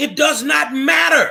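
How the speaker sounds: emphatic loud shout.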